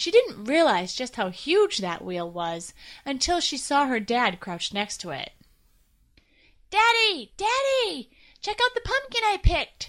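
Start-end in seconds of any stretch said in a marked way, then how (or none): 6.7-9.9 very high, thrilled, excited shout. Narrator reading a girl calling out to her father by the tractor, excited yell. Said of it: "she yelled excitedly".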